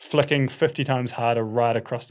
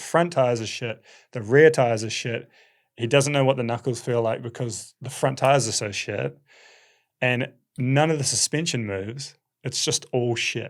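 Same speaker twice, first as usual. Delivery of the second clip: ordinary talk, nothing marked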